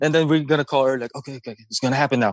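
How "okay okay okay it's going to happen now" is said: put-on nervous, psyched-up voice, lower pitch. Retelling the moments before the call: retelling pumping self up. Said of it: "so you're pumping yourself up".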